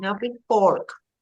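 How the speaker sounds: ordinary talk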